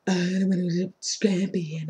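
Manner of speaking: mock whispering. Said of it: "I'm imitating Mika and this is how Mika talk".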